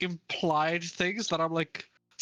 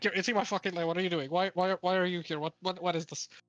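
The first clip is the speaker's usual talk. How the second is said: playful, mock angry tone. Acting out crashing out at someone in a video game: playful mock anger. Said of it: "In a very playful way".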